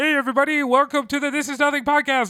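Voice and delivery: very high-pitched frog-puppet voice. Replaying the show's intro line: Kermit the Frog voice. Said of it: "my intro sounded a lot like Kermit the Frog".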